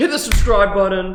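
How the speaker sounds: mock yelling. Retelling how a middle schooler in class yelled out, imitating a student yelling out. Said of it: "he just yelled out in the middle of class".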